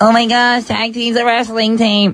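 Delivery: slow, naive dawning realization. Imitating viewers who go online after hearing the joke: imitating online viewers. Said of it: "They're gonna go online and be like".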